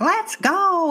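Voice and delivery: shrill tantrum yell, pitched way up. Retelling a boy impatient with his parents to fly, imitating a kid's yelling fit. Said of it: "He's like yelling".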